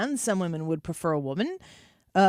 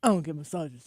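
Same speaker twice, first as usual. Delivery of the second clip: put-on low, manly man voice; 4 semitones lower than usual. Teasing the other speaker about talking in a man voice, imitating a man voice. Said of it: "You're talking in your man voice".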